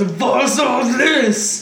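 restrained, played-small bellowing roar. In a tabletop game, a player voices Balazar using his fire breath, bellowing. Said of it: "Balazar bellows".

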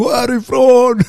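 put-on very high, loud, shrieked scream. Retelling how a friend screamed at one of the girls, retelling a scream. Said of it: "han står och fucking skriker på ena bruden".

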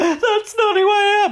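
very high, loud, drawn-out put-on crying voice. Retelling a contestant's reunion turnaround: imitating someone crying. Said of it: "then five minutes later crying".

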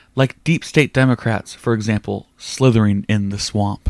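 plain

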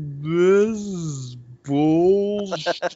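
slowed-down, dragged-out slow-motion voice. Mocking a guest's slowed-down Wi-Fi audio by repeating his words: slow-motion voice. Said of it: "You also sound like you're in slow-mo".

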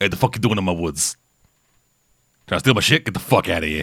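rough gruff beast voice, low and fast. Player imagines a griffin finding someone in its woods, gruff griffin voice. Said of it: "I don't know if they'd go full Brooklyn accent".

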